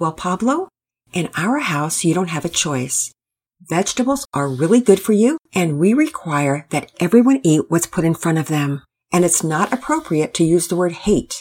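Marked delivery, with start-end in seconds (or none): none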